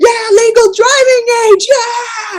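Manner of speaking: mock whooping cheer, very high and loud. Retelling cheering when number sixteen was called: retelling a loud cheer. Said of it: "I cheered as loudly as possible".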